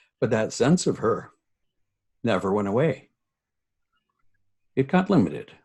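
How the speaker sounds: on the verge of tears. Speaking about her sense of self that never went away, on the verge of tears. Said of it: "I'm gonna start crying".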